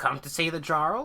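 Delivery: very high, loud, grating, barely human crow voice. Voicing a large crow calling out to the party: grating, sparsely humanoid crow voice. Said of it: "cries out in its sort of, um, sparsely humanoid voice".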